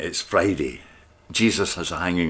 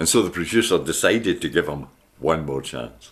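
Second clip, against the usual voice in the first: usual speaking voice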